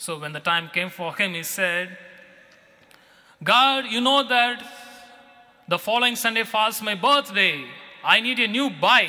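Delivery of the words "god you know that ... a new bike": put-on loud shout, voice raised. Telling a story of a boy praying for a new bike: louder voice. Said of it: "said in a louder voice".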